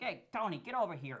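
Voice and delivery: put-on Staten Island Italian accent with R's sounded. Mimicking how Staten Island Italians talk, in a Staten Island Italian accent. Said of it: "they have like a Staten Island one, but they pronounce their R's. So they're like".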